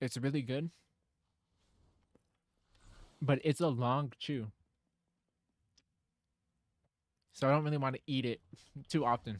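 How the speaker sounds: speaking with mouth full while eating. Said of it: "I'm eating a Cheesecake Factory bread".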